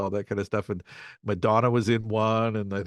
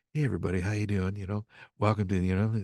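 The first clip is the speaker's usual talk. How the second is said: put-on fm radio host voice. Imitating an FM radio host: FM radio DJ voice. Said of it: "the F M guys who are like".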